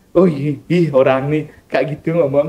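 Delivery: ordinary delivery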